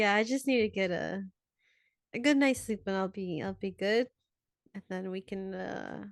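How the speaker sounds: unconvincing, self-reassuring tone. Repeating the character's line while the others watch: trying to convince himself. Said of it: "that tone in his voice where he's not trying to convince you".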